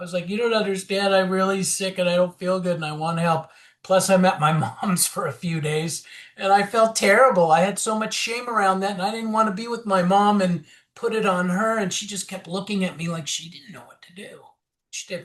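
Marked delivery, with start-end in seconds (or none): 0.3-6.1 mock tearful pleading through heavy crying. Retelling a plea on the phone after breaking down: imitating own heavy crying. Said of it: "I started crying heavily".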